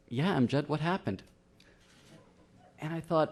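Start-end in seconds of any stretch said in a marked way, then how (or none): 0.1-1.2 put-on guileless, blameless child's tone, pitched up. Retelling what a small child asked after hitting him: imitating a child's innocent tone. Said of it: "with all innocence".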